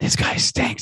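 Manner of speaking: quiet, low-key aside. Retelling an audience member's remark to his friend: imitating a quiet remark. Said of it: "He just said it, like, quietly".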